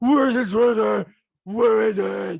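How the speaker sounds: very loud, rough, slow, growling bellow. Quoting Batman talking with Bane in the third movie: mocking Batman voice. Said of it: "I always quoted it from you".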